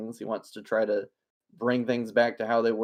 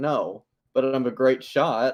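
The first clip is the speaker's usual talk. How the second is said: utterly flat, very slow, drawn-out deadpan; 3 semitones higher, 4 dB louder than usual. Retelling how a character answers in the most deadpan way: imitating a deadpan delivery. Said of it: "He says it in the most deadpan way ever".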